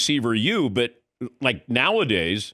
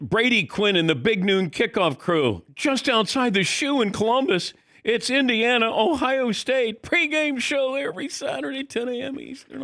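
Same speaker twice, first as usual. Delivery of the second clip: hyped-up, excited announcer voice, very high and rising; 11 semitones higher than usual. Asked to say it with excitement, the speaker reads the show promo: excited promo read. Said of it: "say it with excitement".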